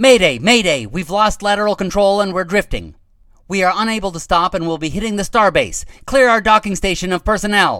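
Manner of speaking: frantic, distressed, high and loud panicked voice. Reading a story: a lieutenant radios the base, panicked voice. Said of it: "in a panicked voice".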